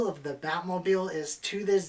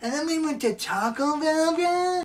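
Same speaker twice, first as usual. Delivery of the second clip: put-on dazed stoner-bro voice, very high; 12 semitones higher, 4 dB louder than usual. Mid-story, still talking like a stoner after being asked why; stoner voice. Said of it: "Why are you talking like this".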